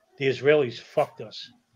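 put-on mutter under breath. Speaker recounting what a drunk man said, as told in a book: retelling a mutter. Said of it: "he basically mutters".

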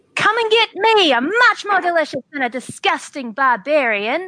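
high, full-volume, all-out screamed taunting voice. A player ends their turn by having their character scream toward the zombies. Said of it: "and I'd like to scream".

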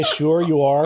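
ordinary delivery

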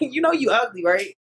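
put-on laughing while talking. Retelling how they tease people: imitating laughing while talking.

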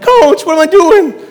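put-on very high, very loud, shrill, squeaky excited kid voice. Retelling asking a coach a question at football camp at twelve, squeaking voice. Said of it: "kind of squeaking my voice through".

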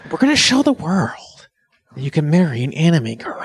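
slightly jokey delivery. Reading off a phone, the speaker's delivery goes a little jokery. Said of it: "that's going a little jokery".

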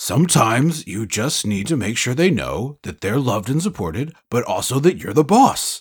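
menacing horror villain voice. Riffing with another speaker about Denise and Jason, in a Freddy voice. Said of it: "I don't know why I'm doing Freddy voice".

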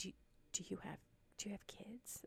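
stumbling, hushed whisper, very quiet. Retelling what the HR person asked: imitating a whisper. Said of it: "whispered to me".

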